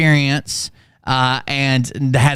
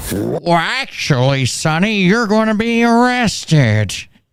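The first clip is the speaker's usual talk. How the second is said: put-on, high-pitched old codger voice; 5 semitones higher than usual. Reacting to a video character who turned into an old man: imitating an old man voice. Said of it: "he turned into an old man".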